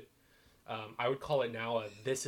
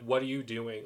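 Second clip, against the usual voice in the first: put-on furious voice, louder; 6 dB louder than usual. Retelling a scene where Anna confronts her sister: imitating furious Anna. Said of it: "Anna's just, like, furious at her".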